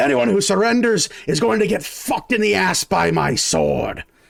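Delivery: raspy voice, pitched high. A game narrator voicing a soldier's boss answering his men, yelling. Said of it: "You hear his boss yell".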